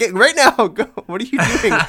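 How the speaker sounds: shrill, very high, loud yelling. Retelling how a man was yelled at onstage, retelling a yell. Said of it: "just like yelled at him".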